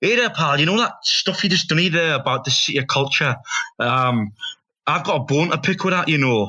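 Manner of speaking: put-on Glaswegian man's Scottish accent. Retelling what a Scottish man at a gig said: Scottish accent. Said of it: "Do the accent, do the accent".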